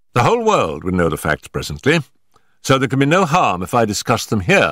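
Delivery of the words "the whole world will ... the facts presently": usual speaking voice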